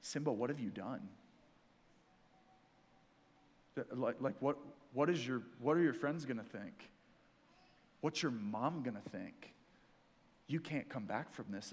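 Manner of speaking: low, hushed half-whisper, close in. Retelling a film scene where an enemy half-whispers in a son's ear: imitating Scar half-whispering. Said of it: "he starts whispering in his ear, and he goes".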